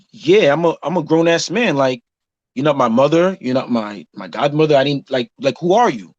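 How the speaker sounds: plain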